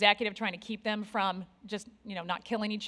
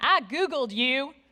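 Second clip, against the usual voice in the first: put-on US Southern accent; 4 semitones higher, 4 dB louder than usual. Speaker retelling what an HP executive recruiter said on the phone: Southern accent. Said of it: "who said in a southern accent".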